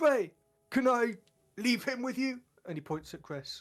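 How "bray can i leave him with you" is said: high, loud shout, raised to carry. A player's character calls out to Bray as Bray climbs up: shouting. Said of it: "Zach shouts out".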